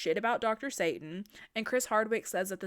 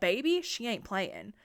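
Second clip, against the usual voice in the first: normal talking voice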